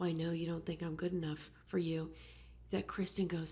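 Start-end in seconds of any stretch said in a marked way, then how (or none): none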